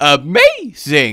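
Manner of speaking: put-on high-pitched, inflected voice on "amazing". Imitating how a game character says it: high-pitched inflected "amazing". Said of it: "that was a pretty good impression".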